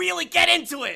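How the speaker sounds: very high, loud furious scream.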